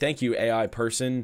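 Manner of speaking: sardonic, mocking, sarcastic tone. Retelling what the speaker said to the Taco Bell AI bot, retelling a sarcastic remark. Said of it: "I just sarcastically remarked things".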